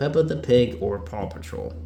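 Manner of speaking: ordinary talk, nothing marked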